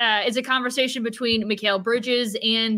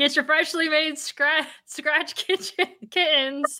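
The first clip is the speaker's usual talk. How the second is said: talking through hard laughter, higher pitch; 5 semitones higher than usual. Trying to read an ad line aloud and cracking up, laughing while talking. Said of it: "I'm laughing so hard".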